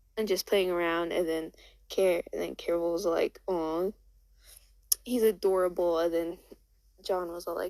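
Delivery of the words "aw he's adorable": ordinary talk, nothing marked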